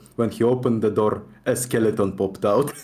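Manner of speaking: low, put-on Russian accent throughout. Telling a story aloud, trying it in a Russian accent. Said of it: "like a Russian accent".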